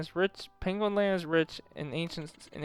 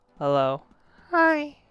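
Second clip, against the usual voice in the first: put-on clumsy, high-pitched little boy voice; 9 semitones higher, 8 dB louder than usual. Exploring Penguin Land in a game, trying out a Balloon Boy voice. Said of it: "a high-pitched balloon boy voice going".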